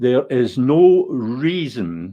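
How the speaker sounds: "reason" stressed in a slow reading.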